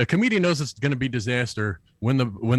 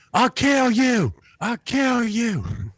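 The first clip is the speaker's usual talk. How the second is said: put-on yell at a very high pitch; 9 semitones higher than usual. Retelling how a heckler stormed off: imitating a heckler yelling. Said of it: "he yelled".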